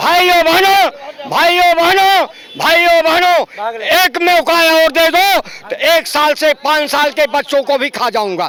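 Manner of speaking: rally-style political oration, projected to a crowd. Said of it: "अरे आप तो नरेंद्र मोदी के स्टाइल में बोल रहे हैं।".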